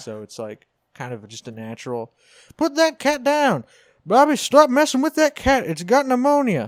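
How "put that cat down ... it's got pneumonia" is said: put-on Oklahoma accent, pitched very high. Trying out King of the Hill voices in conversation: Hank Hill impression. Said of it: "the King of the Hill accent".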